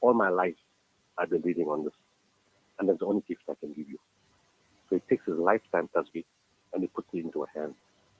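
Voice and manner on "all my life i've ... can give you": usual speaking voice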